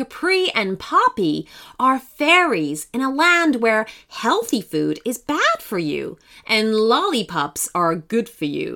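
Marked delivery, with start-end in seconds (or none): none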